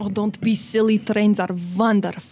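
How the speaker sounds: put-on Russian accent, princess-like voice.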